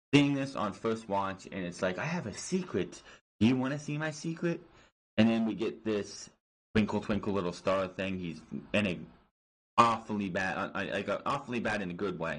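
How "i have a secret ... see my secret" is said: put-on creepy voice, pitched much higher. Describing a creepy scene, the speaker acts out its line in a creepy put-on voice. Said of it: "This was creepy".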